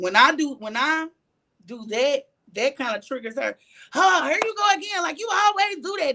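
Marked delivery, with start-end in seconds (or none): 3.9-6.1 acted, upset, reproachful voice pitched way up. Retelling what she said when she got upset, imitating someone upset. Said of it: "And then she got upset".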